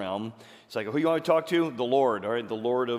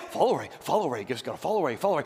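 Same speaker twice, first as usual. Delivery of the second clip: put-on dog voice; 3 semitones higher than usual. Acting out a dog at the park, in the voice of the dog. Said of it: "the voice of the dog and he's like".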